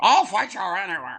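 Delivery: loud, unhinged wrestler voice. Retelling how someone tried to talk like Roddy Piper: imitating a Roddy Piper impression. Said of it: "That was a terrible Roddy Piper impression".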